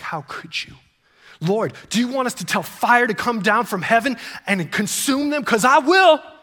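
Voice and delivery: voice boiling with outrage, acted. Speaker retelling what the disciples James and John said to Jesus, acting out outrage. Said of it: "you can almost hear like the outrage in their voice".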